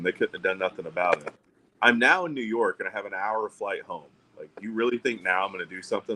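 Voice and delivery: ordinary talk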